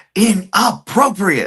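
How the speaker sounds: high, slow, loud yell.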